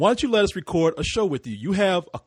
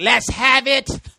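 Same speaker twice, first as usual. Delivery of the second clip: high, loud cartoon leprechaun voice; 8 semitones higher, 6 dB louder than usual. Retelling someone reacting after their gold is stolen: imitating a leprechaun voice. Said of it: "and you're like".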